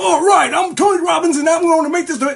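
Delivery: shrill, very loud, high-pitched declaring voice. Warning against faking excitement while affirming, imitating Tony Robbins. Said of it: "don't try to be".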